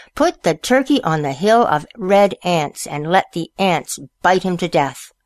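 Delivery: ordinary delivery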